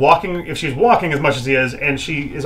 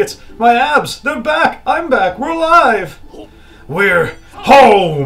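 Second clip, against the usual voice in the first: high, loud, excited shouting, home drawn out; 8 semitones higher, 5 dB louder than usual. A character among others who were just saved, shouting. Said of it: "There's no need to shout".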